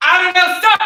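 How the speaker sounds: loud, confident, high-pitched, crisp delivery.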